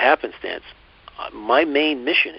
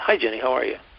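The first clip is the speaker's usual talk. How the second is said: mock nonchalant, quick and casual. Retelling greeting a worker by their name tag: imitating a nonchalant greeting. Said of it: "it's so nonchalant".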